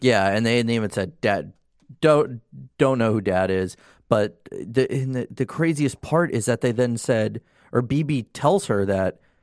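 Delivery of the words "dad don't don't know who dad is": normal talking voice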